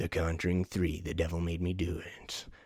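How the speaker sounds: low, sinister trailer announcer whisper.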